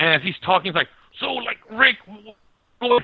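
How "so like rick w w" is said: mock high, very slow, burp-broken stutter. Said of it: "he looks like burping".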